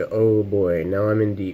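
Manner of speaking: ordinary talk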